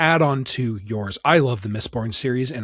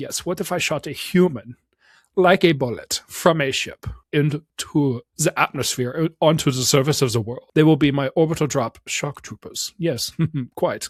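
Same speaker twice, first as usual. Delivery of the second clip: aristocratic German voice, higher; 4 semitones higher than usual. Parodying a comedian's aristocratic, sort of german voice about sci-fi troopers. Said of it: "the guy that I'm parodying".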